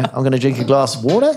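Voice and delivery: uptalk, question-like rise lifting the final word water. Describing Essex speech, a statement sounding like a question; rise at the end like a question. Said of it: "it's a statement, but it sounds like a question".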